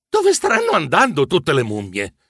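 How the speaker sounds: ordinary delivery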